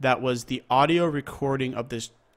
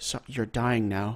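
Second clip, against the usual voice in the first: put-on calm whisper, much quieter; 2 semitones lower, 3 dB quieter than usual. Retelling what the shooter said to the man on the stairs: retelling a calm whisper.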